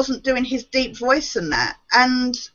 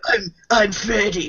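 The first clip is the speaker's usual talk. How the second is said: awful, overdone villain voice, dropped low; 4 semitones lower than usual. Mocking the remake actor's voice for Freddy Krueger: awful Freddy Krueger voice. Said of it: "He was awful at doing that voice. It was like the Batman voice".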